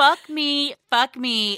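long, very slow, drawn-out, stretched scream. Retelling facing a great fear in the street, retelling own screaming. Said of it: "was screaming".

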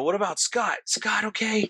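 high-pitched put-on scream. Retelling shouting to Todd about Scott after the truck incident, retelling a scream. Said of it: "I'm screaming".

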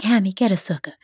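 put-on Southern accent. Quoting a woman from Atlanta in class: imitating a Southern accent. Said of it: "she had a great Southern a-, accent".

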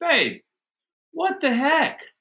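loud, high-pitched yelling.

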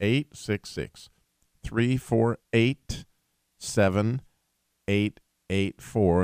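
slow, unhurried delivery. Giving listeners the call-in number, saying it slow. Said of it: "I'll say it slow".

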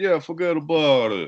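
put-on stock mob-movie Italian accent. Retelling how Gio answered a refill request: stereotypical Italian accent. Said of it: "with the stereotypical Italian accent".

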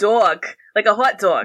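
put-on New York accent. Showing how a partner says hot dog, in a New York accent. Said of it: "What does a hot dog sound like in a New York accent?".

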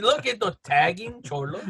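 put-on Spanish-tinged English accent. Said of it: "that's the way Lucas talks".

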